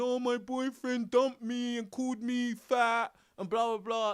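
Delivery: high, whiny, fake sobbing voice. Imitating a woman who is crying about her boyfriend: mock crying. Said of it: "and she's crying".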